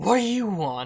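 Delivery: voice as if through a speaker. Voicing an armored character confronting a player: voice like through a speaker. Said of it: "like she's speaking through a speaker kind of sound to it".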